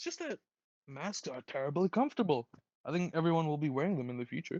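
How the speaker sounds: bright, joyous, happy, chipper voice. Reading a movie line on request, in a happy, chipper voice. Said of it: "Like a happy, joyous voice".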